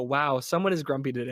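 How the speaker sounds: ordinary talk, nothing marked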